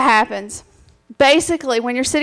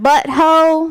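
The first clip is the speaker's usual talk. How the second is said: drawn-out Southern American drawl; 3 semitones higher, 3 dB louder than usual. Listing slang words, the favorite one said in a Southern accent. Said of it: "This is my favorite with a southern accent".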